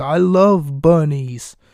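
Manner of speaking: put-on extremely thick, most British accent imaginable. Retelling what someone in a bunny costume said, in an extremely British accent. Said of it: "in a the most British accent that you can ever imagine".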